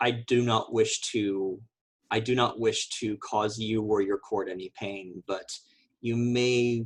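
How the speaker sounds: hushed, quiet, low-pitched voice kept down. In character, speaking to Dupool while Silicate is away, quiet low-pitched voice. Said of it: "My voice is pitched low".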